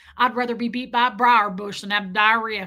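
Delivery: put-on Southern American accent in a man's voice. Retelling a Southern man nose to nose with you in a back seat; imitating a Southern man. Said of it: "This Southern man goes".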